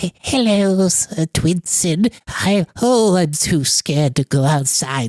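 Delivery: squeaky, timid, high, slow little mouse voice. Describing a game character where you play a mouse: very mousy voice. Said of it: "very mousy voices".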